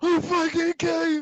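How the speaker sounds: imitated tearful rage. Retelling the actor's scene: imitating angry crying. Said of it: "he's crying and angry".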